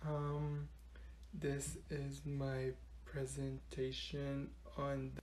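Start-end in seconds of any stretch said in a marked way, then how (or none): 1.3-5.2 barely audible voice, lower and quieter. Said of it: "why is she whispering?".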